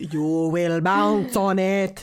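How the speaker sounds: very slow, dragged-out drawl on every word. Retelling a podcast bit done in the Nosferatu voice. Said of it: "the Nosferatu voice".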